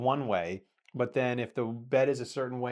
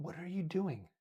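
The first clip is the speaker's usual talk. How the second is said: hushed, high, sly half-whisper; 6 semitones higher, 8 dB quieter than usual. Retelling half-whispering a question to him during a call: retelling a half-whisper. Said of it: "I'm whispering to him".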